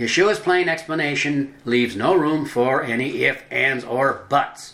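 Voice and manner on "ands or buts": buts stressed, said slowly. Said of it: "Emphasis on buts".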